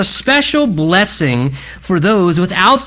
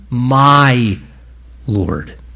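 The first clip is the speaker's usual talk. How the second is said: MY stressed, Lord dropping low. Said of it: "The emphasis is on the first word".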